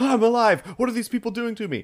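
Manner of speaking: very high, rushed, frantic, panicked babble. Retelling how a newly sentient hat reacted: acting freaked out. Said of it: "it kind of freaked out like".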